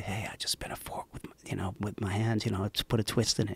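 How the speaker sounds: quiet, secretive whispering. Retelling a phone call made from the bathroom, retelling a whisper. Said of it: "I'm whispering to him".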